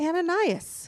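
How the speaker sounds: high, ringing called-out voice.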